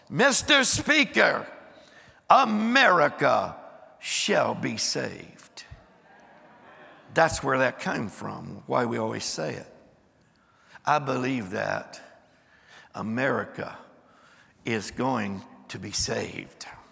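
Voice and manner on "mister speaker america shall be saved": mock sweeping herald voice, loud, bold, slow. Recounting a dream where an angel unrolls a scroll: retelling a loud, bold announcement. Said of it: "he announces in a loud and bold voice".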